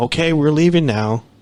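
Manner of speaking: mild, half-shouted call. Retelling what the speaker shouted at a growling thing while climbing a hill, retelling a shout. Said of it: "I just shouted at the top of my lungs".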